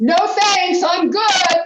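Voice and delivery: full-volume, very loud, high-pitched shout. Demonstrating how to turn someone down, with a very loud yell. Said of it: "I yell out in a very, very loud voice".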